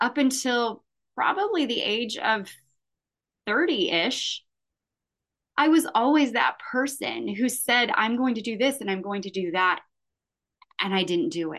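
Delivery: choked up, voice catching with emotion. Speaker recalls training for and running a full marathon, choked up. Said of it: "And I'm getting choked up".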